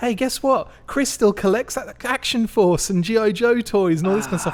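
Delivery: put-on very high, shrill, top-of-the-voice yell. Retelling how someone yelled out about his toy collection, retelling a top-of-voice yell. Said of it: "yelled at the top of his voice".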